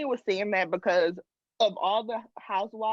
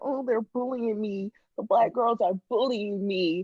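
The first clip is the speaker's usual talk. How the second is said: mock crying, complaining tone. Retelling how a cast member complained on the show: imitating someone crying. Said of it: "came on there and was crying, saying".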